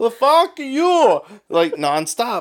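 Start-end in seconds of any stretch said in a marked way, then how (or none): 0.0-1.2 loud, shrill, very high put-on Indian accent. Retelling a back-and-forth argument with a guy, imitating his indian accent. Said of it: "in his Indian accent".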